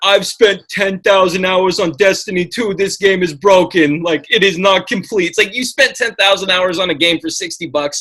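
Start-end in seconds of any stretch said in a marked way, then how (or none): 0.0-5.3 dopey, dim-witted, silly dumb voice. Quoting players complaining about Destiny 2, in a dumb idiot voice. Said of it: "I just love [name]'s dumb idiot voice".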